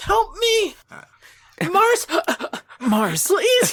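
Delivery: very high-pitched, anime-style cry. A kidnapped friend stuck in the Shadow Realm calls out to Mars: anime voice. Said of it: "This is my anime voice".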